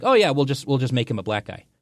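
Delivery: ordinary delivery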